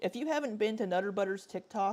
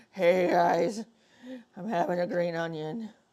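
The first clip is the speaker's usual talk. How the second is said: put-on drunk voice, louder; 6 dB louder than usual. Imitating Amberlynn from a paused video frame: mock drunk voice. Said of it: "she looks like she's drunk".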